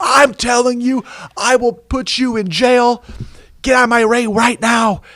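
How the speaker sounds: enraged, very high, furious yelling. Telling a joke, voicing the sea captain ordering a ship away: acting out a furious captain. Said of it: "The ship captain's furious".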